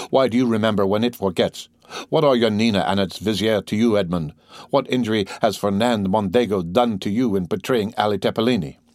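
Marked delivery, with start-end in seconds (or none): none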